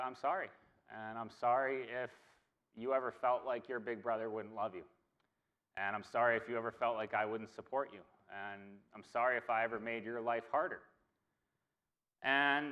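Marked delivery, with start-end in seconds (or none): none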